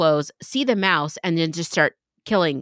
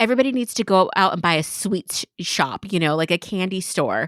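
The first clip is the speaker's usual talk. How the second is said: ordinary talk, nothing marked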